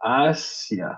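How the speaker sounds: Asia said with the first syllable hit hard. French lesson on word stress rules: stress on first syllable of asia. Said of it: "on met l'accent sur la première syllabe".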